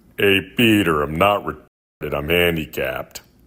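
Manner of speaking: very loud cartoon-character yell, belted out. A submitted clip of someone doing a Joe Swanson impression. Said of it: "this is my impression of Joe Swanson from Family Guy".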